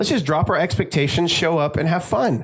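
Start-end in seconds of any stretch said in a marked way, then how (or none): none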